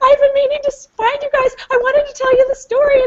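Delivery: put-on crying through the words, very high, tearful. Retelling what a woman said after jumping out of her chair, imitating someone crying. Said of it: "she starts crying, and she's like".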